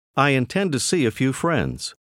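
plain

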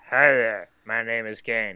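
low robot voice. Showing how someone would sound introducing themselves: robot voice. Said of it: "Like a robot".

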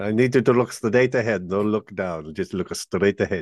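failed Mexican accent attempt. Acting out an instruction someone gave, attempted mexican accent. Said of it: "I can't do a Mexican voice".

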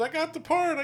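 mock, very high-pitched, excited shriek. Retelling a woman taking a phone call about a part, screaming. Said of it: "And she screams".

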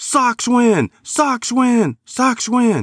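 very high, slow, stretched-out excited announcer call. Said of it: "He would get so excited".

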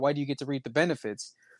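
plain

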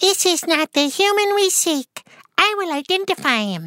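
very high, crazed, maniacal clown-robot voice. Voice actor showing the android voice he did for Dragon Ball Z: maniacal clown android voice. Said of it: "my voice for it was like".

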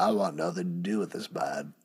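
put-on low, soft, botched California surfer-dude accent. Retelling what the dune buggy Transformer says as he surfs in, attempted California surfer accent. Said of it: "It was supposed to be California Surfer".

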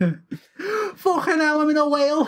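put-on Scouse accent. Acting out a character who wakes up thinking he's in a whale: scouse accent. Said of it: "Why have we made him Scouse?".

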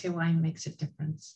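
ordinary talk

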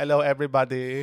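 put-on Filipino accent. Playing a cult leader greeting followers: Filipino accent.

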